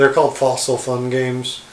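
normal talking voice

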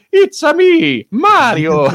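very high, sing-song, swooping cartoon character voice. Joking about a portal opening and a character walking out: Mario voice. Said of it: "Chris Pratt's character's gonna walk out".

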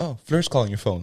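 usual speaking voice

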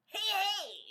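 booming, high-energy radio DJ voice, very high, very loud. Explaining how two character voices differ, showing the radio DJ: high-energy radio DJ voice. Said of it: "The radio DJ is like high energy".

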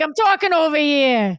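put-on mobster voice. Doing the podcast intro line as a character: Sopranos-style mobster voice. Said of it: "I've been watching a lot of Sopranos".

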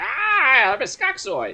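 high, drawn-out, sing-song creature voice. Talking about a book's characters, guessing how one sounds: Skuxoid creature voice. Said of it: "the guy sounds like this".

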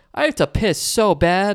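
loud high blurt. Retelling a streamer sneaking past a filming sign, imitating him talking really loud. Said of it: "like really loud".

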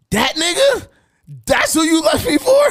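very high, loud, drawn-out carrying holler, rising. Retelling a confrontation with an ex, imitating own loud yelling. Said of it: "Loud as shit".

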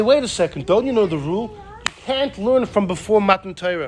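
normal talking voice

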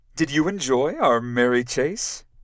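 cheery, lighthearted, bright. A woman greets the narrator after leading them back up the hill; cheerful. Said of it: "she said, cheerfully".

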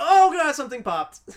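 loud, high-pitched pained cry.

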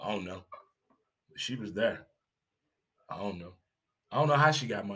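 low, quiet, lame-sounding mumble.

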